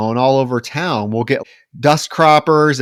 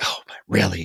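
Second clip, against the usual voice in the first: mock annoyed muttering, lower and quieter; 6 semitones lower, 8 dB quieter than usual. Describing a character getting visibly annoyed: imitating muttering under breath. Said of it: "making comments under her breath like".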